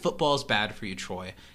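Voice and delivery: ordinary talk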